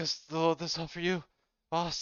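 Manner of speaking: fed-up, put-upon tone. Voicing a worker asking the boss about a big crate: exasperated. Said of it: "as he says, exasperated".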